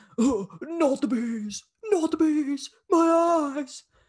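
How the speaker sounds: very high, loud yelling. Quoting a classic movie line in a Nicolas Cage impression. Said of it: "it's a classic Nick Cage line".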